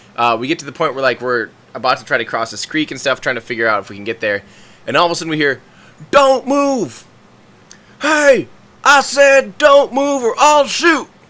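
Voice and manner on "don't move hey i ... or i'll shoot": very high, very slow, drawn-out yell. Retelling a man with a shotgun ordering them not to move: imitating a man yelling. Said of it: "but yelling at us".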